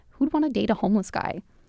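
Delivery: ordinary talk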